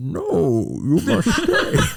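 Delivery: very slow, drawn-out, high, swooping film-villain delivery. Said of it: "and he's like".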